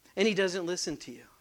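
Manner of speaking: ordinary talk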